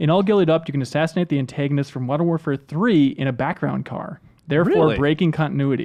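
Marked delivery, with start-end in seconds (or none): none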